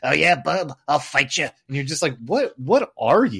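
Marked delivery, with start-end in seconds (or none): 0.0-1.4 put-on nasal cartoon voice, higher, louder. Criticizing the show's voices, doing a nasal high-register Wolverine voice. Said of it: "It's very nasally. He's up here in the register".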